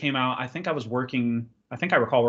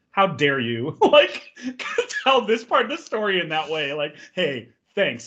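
dead-serious, irritated, annoyed tone, pitched up; 5 semitones higher than usual. Retelling a movie scene's dinner cut: imitating Bill Hader, serious and pissed off. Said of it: "Bill Hader's just got this serious look".

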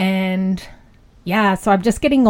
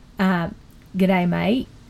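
Australian accent, quieter; 4 dB quieter than usual. Speaker shows they can do an Aussie accent on request. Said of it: "I can do an Aussie accent if required".

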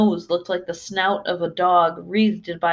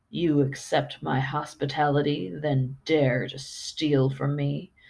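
soft, deep, gravelly, rough beast growl; 3 semitones lower, 5 dB quieter than usual. Narrator reads a beast accusing a guest of stealing, in a deep gravelly voice. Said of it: "came the creature's deep, gravelly voice".

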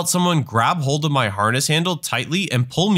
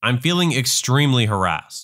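usual speaking voice

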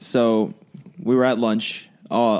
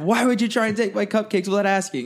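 mock screaming, higher; 11 semitones higher than usual. Retelling how a student reacted to spilled cupcakes: imitating someone screaming. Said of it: "I heard her screaming".

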